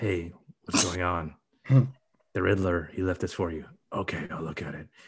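low-key, hushed, grumbly murmur under the breath. Mocking how everyone in a dark film talks, in a half-whispery grumbly voice. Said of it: "talking in like a whispery, kind of grumbly".

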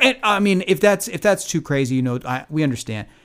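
high, loud, nervous backpedaling. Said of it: "You start making excuses".

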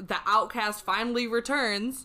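ordinary delivery

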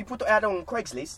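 very high-pitched put-on British accent. Retelling a phone call from Irving, imitating his best British accent. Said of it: "I'm going to do my best British".

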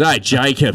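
put-on slipping into Australian accent. Retrying the british tennis coach's greeting, sounding australian. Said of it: "that was even more Australian".

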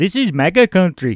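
put-on heavy Indian accent, sing-song. Showing how the two brothers might sound with an accent, heavy Indian-sounding accent. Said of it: "That's more like Indian".

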